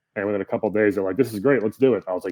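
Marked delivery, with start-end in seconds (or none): none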